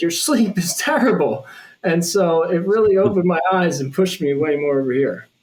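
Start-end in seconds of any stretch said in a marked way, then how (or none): 0.0-1.5 loud, high-pitched, nagging yell. Retelling what a sleep-tracking wearable says after drinking: imitating Whoop yelling. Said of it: "it yells at me, like".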